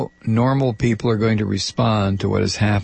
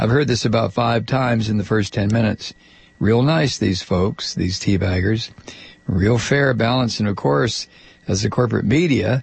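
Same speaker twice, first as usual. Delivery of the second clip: normal talking voice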